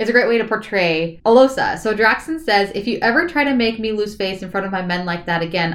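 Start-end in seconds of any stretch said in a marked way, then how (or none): none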